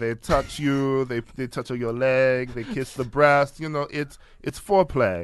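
put-on French accent. Retelling what Catherine Deneuve said about the Me Too movement: Catherine Deneuve impression. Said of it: "I don't know what accent that was".

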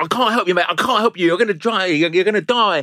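put-on loud, high, repeated yelling. Retelling how the man who took him down shouted at him in the hole, retelling someone shouting. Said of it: "starts shouting at me".

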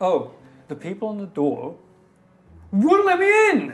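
far too loud, animated, swooping, rising voice. Telling another character in a whispered huddle about being refused: speaking too loudly. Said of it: "You went up again".

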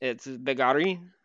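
bad put-on French accent. Pronouncing a player's name for the other speaker: bad french accent. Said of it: "I just like saying things with a bad French accent".

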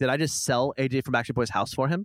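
ordinary talk, nothing marked

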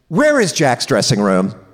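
put-on, gentle, benign exasperation. Retelling a friend asking a stranger for directions: imitating benign exasperation. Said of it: "putting on an air of benign exasperation".

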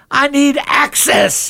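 mock, very high, frantic screaming. Retelling how the speaker stayed on the tour: retelling a scream. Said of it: "I start screaming".

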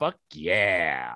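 low, satisfied, celebratory cheer in a put-on voice.

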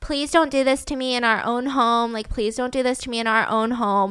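imitated, put-on begging, pleading tone. Retelling how a woman begged her husband: imitating someone begging. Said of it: "she's begging her".

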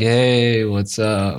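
acted sorrowful, sad, glum tone. Retelling friends answering a video call: imitating a sad voice. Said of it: "the fucking sadness in their voice".

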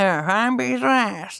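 creaky, slurred voice as if without teeth.

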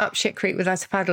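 normal talking voice

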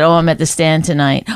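ordinary talk

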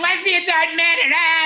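high, heckling shouted yell. Retelling two women in the crowd heckling: imitating women yelling. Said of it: "They're yelling".

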